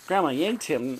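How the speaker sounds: plain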